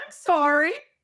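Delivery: cheerful, sunny, beautiful, sweet happy tone. Showing how she answers when her husband says he's hungry, mock beautiful, happy attitude. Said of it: "I say with this like beautiful, happy attitude".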